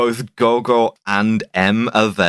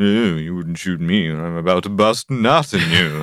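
acted-out seductive bedroom voice; 3 semitones lower than usual. Retelling how Bond talks his way out of being shot: Bond's sex voice. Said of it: "deploying the sex voice".

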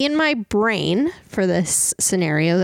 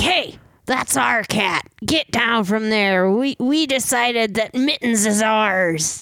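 mocking, rough, brash tough guy voice; 3 semitones higher than usual. The lead ruffian confronts the player over the cat, ruffian leader voice. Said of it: "There's some ruffians. ... they get up to you and the lead one's like".

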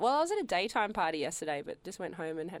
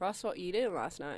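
ordinary talk, nothing marked

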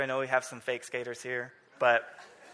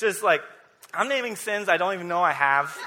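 ordinary delivery

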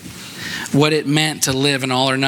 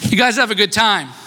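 high, loud yell. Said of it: "I yelled across the river".

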